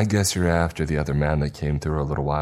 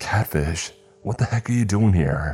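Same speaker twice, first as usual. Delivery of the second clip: tense, stressed, demanding voice; 4 semitones higher than usual. Startled by a friend coming out of the swamp, demanding in a stressed voice. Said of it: "I demanded in a stressed voice".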